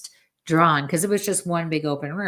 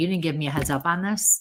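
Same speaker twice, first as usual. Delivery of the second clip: ordinary talk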